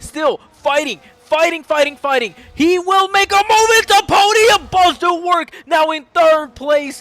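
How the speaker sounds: shrill, frenzied, very loud, high-pitched excited yelling. Calling a close race finish, fighting for podium places: yelling excitedly. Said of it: "I feel like I'm yelling".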